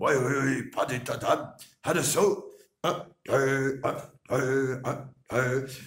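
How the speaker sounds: loud, no-nonsense legionnaire drill voice. Showing off imitations of accents, doing the Legion: Foreign Legion imitation. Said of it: "je peux te faire la Légion".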